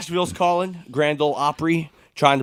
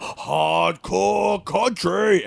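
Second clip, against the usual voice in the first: put-on screaming shout; 4 semitones higher than usual. Retelling what Taz shouted while watching Impact: imitating Taz screaming. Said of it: "Taz immediately screamed".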